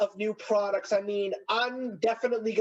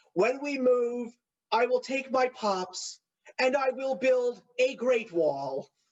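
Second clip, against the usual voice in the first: slow, drawn-out put-on voice, like a politician; 3 semitones higher than usual. Retell a bit from twenty sixteen that got her to laugh, in a Donald Trump voice. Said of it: "I was using a Donald Trump voice".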